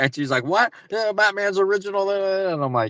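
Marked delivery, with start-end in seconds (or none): 0.4-2.1 put-on angry tone, higher pitch. Retelling what a store worker said back: imitating an angry store worker. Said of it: "she got all angry".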